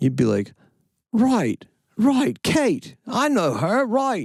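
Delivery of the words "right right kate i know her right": very high, drawn-out put-on Australian accent. Imitating how someone would talk in New Zealand, in an Australian accent. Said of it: "that's an Australian one".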